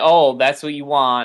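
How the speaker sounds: plain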